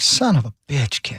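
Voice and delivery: mock exasperated dog voice. Joking about a dog tired of rescuing a kid: voicing Lassie fed up. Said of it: "Lassie was like".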